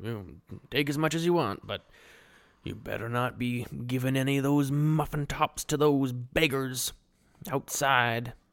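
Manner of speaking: put-on gruff, grumbling old man voice. Retelling Noah talking to his rat friend: gruff Noah impression. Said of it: "he's a gruff old man".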